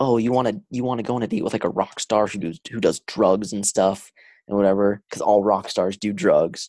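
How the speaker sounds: plain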